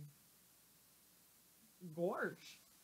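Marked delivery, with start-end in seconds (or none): 1.9-2.6 silly-sounding cartoon dog voice. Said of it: "that was my best Goofy".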